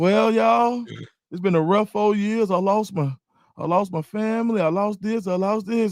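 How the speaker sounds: sorrowful, mournful voice. Imagining someone giving a real testimony: acting out a sad church testimony. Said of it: "can you imagine somebody giving a real testimony".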